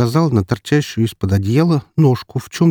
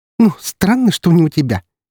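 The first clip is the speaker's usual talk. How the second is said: sly, snide mocking snort, pitched up; 6 semitones higher than usual. Ksyusha answers her brother while poking him with a toothbrush, with a snide snort. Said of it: "Ехидно фыркнула она".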